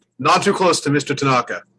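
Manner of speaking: very serious, solemn tone. Voicing a character holding a fishbowl who warns off a visitor: very serious. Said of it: "stands there very seriously holding the fishbowl".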